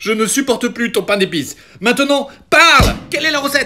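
very high, shrill, full-throated yell. Interrogating someone who begs them not to shout: shouting. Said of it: "ne crie pas!".

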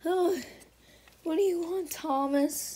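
high, tearful weeping voice, sobbing through words. Dad, upset that Jared left him, answers his son Thomas; crying. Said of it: "Why are you crying?".

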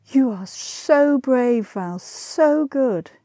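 very drawn-out, very slow, fond admiring cry. Elmer praises her lover val after reading the newspaper, crying out. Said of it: "she cried".

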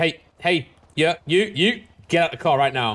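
authoritative, commanding tone. Showing another speaker how to say this line, commanding order. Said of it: "so watch. Say this one, watch".

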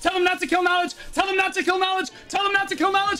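re-enacted yelling. Speaker retells what they screamed on back end comms during the fight: retelling a scream. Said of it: "I'm screaming in back end comms".

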